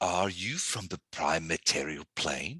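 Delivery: strange put-on voice. Retelling a game scene, she steps closer to the fluffy doorway friend, very odd voice. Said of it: "she says in a very odd voice".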